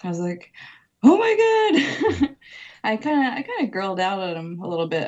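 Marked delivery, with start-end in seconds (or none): 1.0-2.3 high, loud, slow starstruck fangirl squeal with laugh. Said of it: "you might have fangirled".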